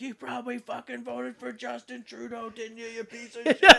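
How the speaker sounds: mock drunk, high-pitched, drunken screaming. Speaker retells a drunk friend screaming at him at two in the morning, imitating someone screaming. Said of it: "he's screaming at me".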